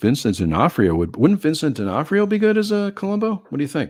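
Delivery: excited, eager voice rising and swooping. Asking Steve about a casting idea for Columbo, excited, voice going up. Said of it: "see how my voice went up there".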